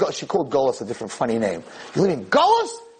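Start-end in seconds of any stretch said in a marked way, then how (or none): 1.9-2.7 put-on very high, fervent, fiery screech. Retelling a woman screaming at him in front of everybody: imitating a woman screaming. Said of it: "she starts screaming at me in front of everybody".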